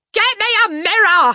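very high, loud, drawn-out yell. After the mother's remarks, the father yells at her. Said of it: "the father yelled".

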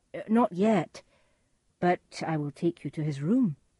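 ordinary delivery

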